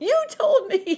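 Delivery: very loud, very high, shrill, furious screech. Retelling someone stomping over at a party to yell at Mom, acting out the yell. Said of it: "she's yelling at Mom at this party".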